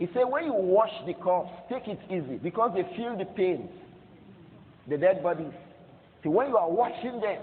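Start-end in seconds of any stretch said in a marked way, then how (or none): none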